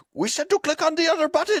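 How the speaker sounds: very high-pitched put-on Indian or Pakistani accent. Retelling a bit someone does, in a Pakistani or Indian accent. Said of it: "Your uh your Pakistani uh slash Indian accent's pretty damn good".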